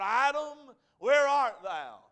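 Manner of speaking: loud, commanding, demanding, fear-inspiring voice. Speaker recalling Genesis 3, voicing God calling to Adam: commanding voice of God. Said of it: "commanding, demanding voice of God".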